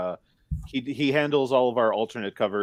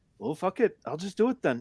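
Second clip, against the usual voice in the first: casual, put-on Canadian accent, pitched up; 8 semitones higher, 3 dB quieter than usual. Quoting another man's reply to his suggestion, in that man's Canadian accent. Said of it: "in his Canadian accent".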